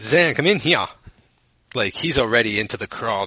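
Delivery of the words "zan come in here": put-on Southern gentleman accent. Quoting a movie character calling someone in: imitating Judge Reinhold's Southern accent. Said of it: "if you have that for Jud Reinhold's accent".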